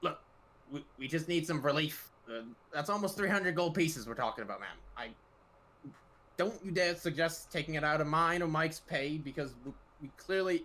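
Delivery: complaining goblin character voice. A goblin man explaining something to an elven woman who won't listen, in a goblin voice. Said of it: "It sounds like a goblin".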